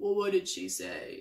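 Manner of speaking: dry, creaky delivery. Recapping a scene where Joe answers a confrontation, imitating Joe's dry voice. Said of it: "that dry voice of his".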